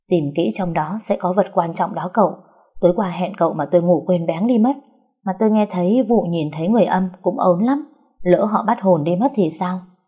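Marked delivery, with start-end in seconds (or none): none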